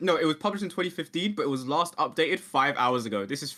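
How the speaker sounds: ordinary delivery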